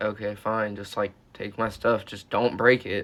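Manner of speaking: ordinary talk, nothing marked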